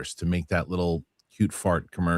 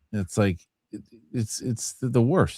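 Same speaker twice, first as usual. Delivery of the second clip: plain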